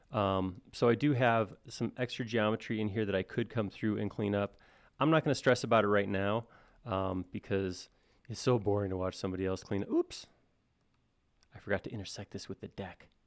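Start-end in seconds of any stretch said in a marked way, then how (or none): 10.0-13.1 soft, hushed whisper under the breath. Noticing a mistake while modelling, whispering. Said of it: "I don't know why I whispered that".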